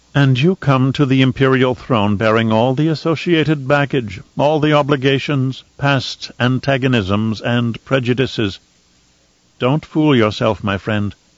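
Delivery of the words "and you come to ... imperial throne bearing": plain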